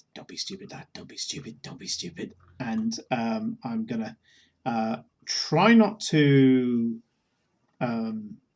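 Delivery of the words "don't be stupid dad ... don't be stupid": barely voiced, whispered muttering under the breath. Voicing a character starting a car while dad watches: muttering under the breath. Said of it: "I'm muttering under my breath".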